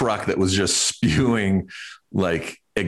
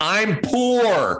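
very high, poorly stretched, long drawn-out yell; 13 semitones higher than usual. Retelling how a man yelled back at someone scolding him, retelling a yell. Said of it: "the guy just yelled at him and goes".

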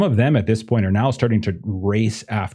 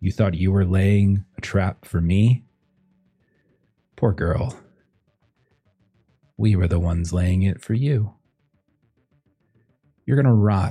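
smug, gloating villain voice; 2 semitones lower than usual. Voicing a character taunting a captive in a quiet whisper: smug villain voice. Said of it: "this smug Lena Kova just kind of lean over".

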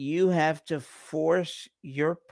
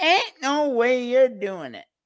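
shrill put-on Southern accent; 10 semitones higher, 5 dB louder than usual. Reminding the other person what they said, the speaker quotes them in a Southern hick accent. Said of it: "In that Southern hick accent of yours".

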